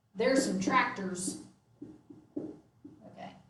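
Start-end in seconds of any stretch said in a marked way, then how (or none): 0.2-1.4 real, heavy rural country accent, laid on thick. Demonstrating an example sentence made to sound real country: heavy country accent. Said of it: "I'm going to make it sound real country".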